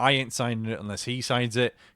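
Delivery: normal talking voice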